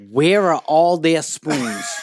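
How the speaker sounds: shrill screaming outburst at full volume. Retelling how the mother screamed at him in front of everyone: imitating someone screaming. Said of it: "She screams at me".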